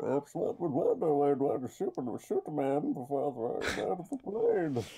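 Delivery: put-on masked villain voice with swooping pitch. Doing a voice another speaker asked for: Bane voice. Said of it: "you can do Bane, Bane from Batman".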